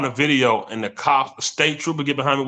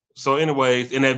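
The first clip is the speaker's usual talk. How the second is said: usual speaking voice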